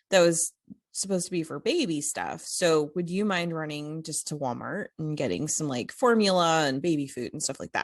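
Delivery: normal talking voice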